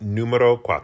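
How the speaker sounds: put-on Italian accent. Saying number four in Italian when asked: put-on Italian accent. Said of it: "just sounds like I'm making up an Italian accent".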